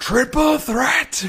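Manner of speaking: angry yell, very high, very loud. Mocking a wrestling official who storms out each time: imitating angry William Regal yelling. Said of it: "Angry William Regal always just goes out there and just yells".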